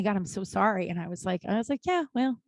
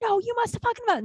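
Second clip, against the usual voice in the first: shrill screaming pitched very high; 13 semitones higher than usual. Retelling a hotel guest yelling at a concierge: imitating a screaming guest. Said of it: "and screaming".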